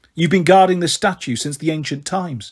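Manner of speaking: ordinary delivery, nothing marked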